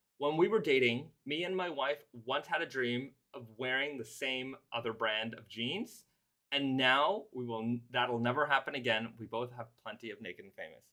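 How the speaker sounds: normal talking voice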